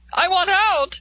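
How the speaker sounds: very high, loud, panicked cry. Miss Rice, stuck in here with the others, crying out in panic. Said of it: "Miss Rice cried in panic".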